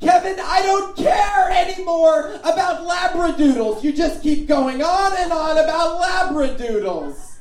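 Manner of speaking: high, furious screaming and shouting.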